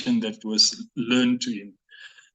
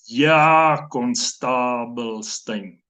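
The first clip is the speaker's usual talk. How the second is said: play-acted, very sarcastic, drawling "yeah". Retelling how the speaker answered a constable who called him by number; retelling a very sarcastic reply. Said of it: "I would say very sarcastically".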